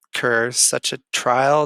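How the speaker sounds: ordinary delivery, nothing marked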